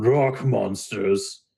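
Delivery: slow, drawn-out words, set off as if quoted. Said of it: "he does big air quotes".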